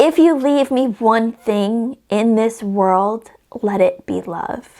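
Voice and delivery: slow, choked-up reading, holding back tears. Reading a favourite book quote aloud, trying not to cry: getting emotional. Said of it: "I'm already getting emotional before I read it".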